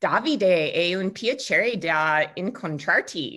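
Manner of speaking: put-on California Valley Girl accent. Greeting someone they are just meeting, to make them laugh, in a Valley Girl accent. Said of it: "my California like Valley Girl accent".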